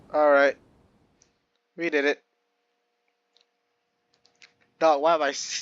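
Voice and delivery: tearful, crying while talking. Celebrating with chat that they did it, crying while talking. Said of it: "I'm crying".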